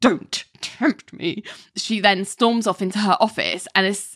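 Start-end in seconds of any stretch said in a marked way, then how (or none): 0.0-1.4 seething words forced out through clenched teeth. Retelling a TV scene, quoting Ali: imitating Ali through gritted teeth. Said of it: "through the most gritted of teeth".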